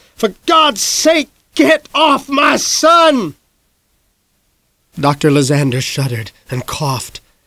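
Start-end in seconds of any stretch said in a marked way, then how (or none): 0.2-3.3 very high, slow, drawn-out shout. A narrator reads the father's line, shouted. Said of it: "Dad shouted".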